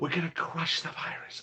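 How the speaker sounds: soft, high, hushed whisper. Joking about feeling like whispering after a vaccine: whispering like Joe Biden. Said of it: "whispering like, uh, like Joe Biden".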